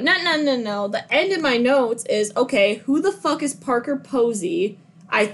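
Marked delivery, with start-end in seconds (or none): none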